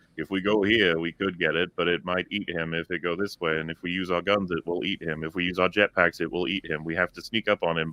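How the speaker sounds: mock lifeless, low, flat monotone with zero emotion. Complaining about the Mandos' dialogue, the speaker mimics their lines; flat Mando monotone. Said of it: "delivered monotone lines of just like".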